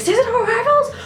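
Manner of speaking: very high, loud, excited and thrilled outburst.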